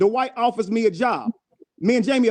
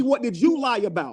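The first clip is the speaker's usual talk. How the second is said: ordinary delivery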